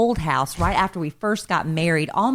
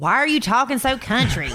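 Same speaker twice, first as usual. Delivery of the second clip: pitched-up, grumpy, needling, griping voice, put-on; 6 semitones higher than usual. Retelling what the other speaker said on the phone, imitating Alan griping. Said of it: "You make it sound like I was griping at you".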